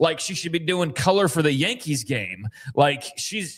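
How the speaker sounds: ordinary delivery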